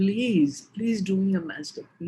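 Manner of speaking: put-on begging. Retelling begging the doctor on one's knees: retelling own begging. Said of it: "down on my knees and I begged him".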